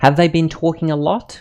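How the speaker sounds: pitch rises upward on the word lot. Reading a practice question in an intonation lesson: rising pitch on final lot. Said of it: "Again, I end higher".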